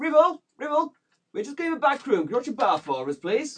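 shrill, very high, loud shout. A game master's character opens a kitchen hatch and shouts to Ribble: shouting. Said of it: "And shouts".

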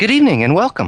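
fake female voice, very high-pitched. The speaker warns listeners, then voices a woman greeting them; put-on female voice. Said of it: "I have to put on my female voice".

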